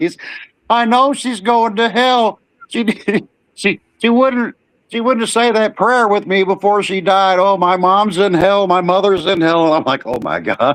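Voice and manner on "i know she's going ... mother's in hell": play-acted wailing and bawling sobs, very high pitched. Retelling a man at his mother's funeral, imitating him bawling. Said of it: "He's bawling his eyes out".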